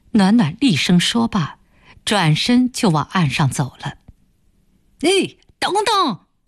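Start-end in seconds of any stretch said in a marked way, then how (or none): 5.0-6.2 shouted, very high-pitched. Zhan Shideng calls after Nuannuan as she walks away, shouting after her. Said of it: "又在背后喊着".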